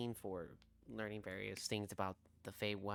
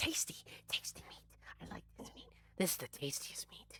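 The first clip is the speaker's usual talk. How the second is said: tiny, whispered, breathy little pet-creature voice; 8 semitones higher than usual. Narrating a scene, voicing the furry pet compy as it eats meat: small little creature voice. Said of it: "you hear his small little voice like".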